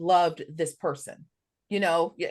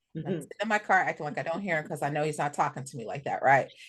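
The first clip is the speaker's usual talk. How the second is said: usual speaking voice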